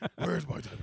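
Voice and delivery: put-on loud, hollering, senile, confused old man voice.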